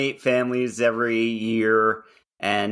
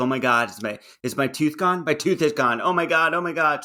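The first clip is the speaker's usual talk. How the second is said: put-on frantic, tearful panic, high and rising; 5 semitones higher than usual. Retelling a child's panic after a tooth knocked out: imitating someone panicking and crying. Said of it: "Adriana starts freaking out and starts crying".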